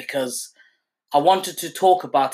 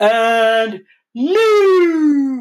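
very high, loud announcer cry, stretching 'new'; 10 semitones higher, 7 dB louder than usual. Paying tribute to a late ring announcer: Howard Finkel ring announcer voice. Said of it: "that's my little impersonation".

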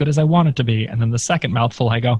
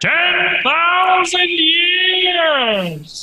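put-on wizard voice, much higher pitch. Back on the show after a long absence, in the Wizard of Oz voice. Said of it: "you got to say it in the Wizard of Oz voice".

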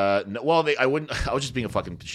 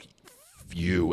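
put-on furious, angry outburst; 3 semitones lower, 3 dB quieter than usual. Retelling how a father turned after police left: imitating furious dad. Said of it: "And he was so fucking mad".

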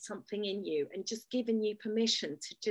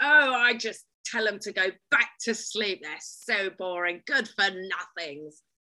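loud, booming, grand and careless aristocratic voice; 7 dB louder than usual. Speaker retells what a woman in the House of Lords says, acting out her words. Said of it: "She goes".

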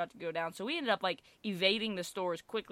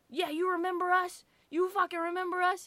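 play-acted raw, shrill yelling, voice up very high; 12 semitones higher, 4 dB louder than usual. Retelling how the brother yelled at the store owner: imitating someone yelling. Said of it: "my brother's yelling at the owner".

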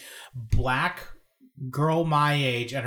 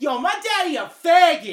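put-on rowdy, loud, high-pitched drunken bellow; 7 dB louder than usual. Retelling what a drunk daughter said out loud: imitating a loud drunk shout. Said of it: "like out loud that volume".

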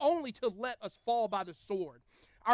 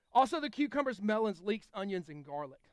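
ordinary talk, nothing marked

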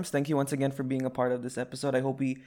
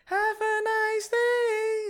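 very high falsetto, higher. Showing how the podcast sign-off is done: highest falsetto voice. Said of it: "in our highest falsetto voice".

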